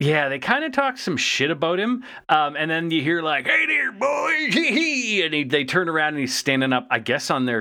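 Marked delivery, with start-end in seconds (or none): 3.5-5.2 very high, slow, drawn-out wild prospector voice. Retelling how Bulkhead greets two soldiers: Bulkhead voice. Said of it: "Bulkhead always sounded like a crazy prospector".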